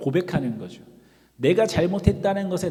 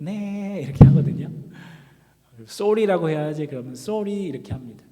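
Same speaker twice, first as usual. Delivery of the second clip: utterly pathetic, pitiful, remorseful, sorry voice; 3 dB louder than usual. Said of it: "정말 아주 불쌍한 목소리로".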